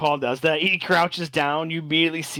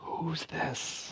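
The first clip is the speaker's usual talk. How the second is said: very quiet, hushed, whispered aside; 14 dB quieter than usual. Player voicing a character who asks about a newcomer, whispering. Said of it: "he kind of like whispers".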